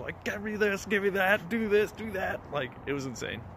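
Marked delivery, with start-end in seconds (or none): 0.2-2.4 loud, high-pitched yelling. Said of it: "I was yelling".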